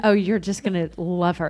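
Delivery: ordinary delivery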